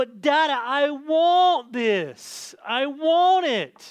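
put-on very slow, loud, drawn-out, insistent little-girl voice. A father retells what his daughter said to him, imitating Addie's loud demand. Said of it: "She says it real loud".

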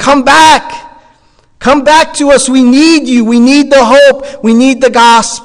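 loud, high-pitched yelling, calling out. Retelling a dream of people calling him back: imitating people yelling. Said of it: "they were yelling".

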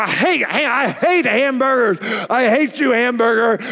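acted-out scream. Retelling being six and refusing dinner, reenacting screaming at the hamburger. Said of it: "I would scream at the hamburger".

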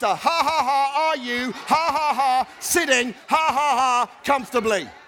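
slow, each word broken by ha-ha laughter. Showing the audience how to ask the question, saying it with laughter. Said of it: "Now say it with a laughter".

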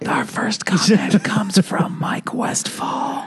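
hushed, very high-pitched whisper. Show hosts agree to read listener comments in whispers: whispering.

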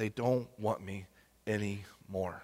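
sorrowful, very hushed, very low, deep murmur. Retelling the story, voicing God's words to Samuel, acting out a very sad tone. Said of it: "this very sad, like, tone of".

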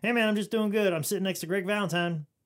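high, loud mock boasting voice. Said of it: "and be like".

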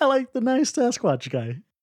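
high, slow, mocking impression.

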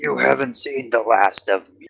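high-pitched dragon voice. Voicing a dragon flying into the clouds: dragon roaring back. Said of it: "you just hear him roar back".

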